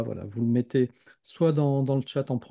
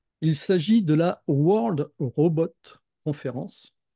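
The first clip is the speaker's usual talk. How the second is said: rough, approximate English accent, spoken carefully; 4 semitones higher, 3 dB louder than usual. A speaker names an English-titled conference, in an approximate English accent. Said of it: "j'essaie avec mon, mon accent anglais approximatif".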